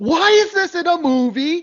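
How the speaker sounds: very high-pitched, slow, drawn-out shouted outburst. Retelling a Riff Tracks joke during a scene: imitating Bill Corbett yelling. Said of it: "Bill Corbett just yells".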